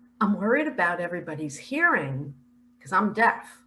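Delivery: ordinary talk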